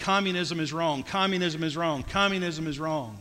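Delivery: normal talking voice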